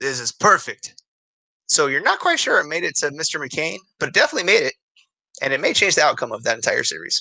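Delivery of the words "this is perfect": put-on voice with a Russian accent. Describing a weapon drop in a game, a voice speaks in a russian accent. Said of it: "you hear a Russian voice say".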